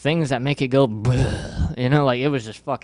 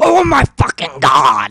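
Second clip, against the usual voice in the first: put-on frantic outburst, very loud and very slow; 5 semitones higher, 9 dB louder than usual. Retelling a friend's reaction to news, imitating a friend freaking out. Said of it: "he went, like, Exorcist on me".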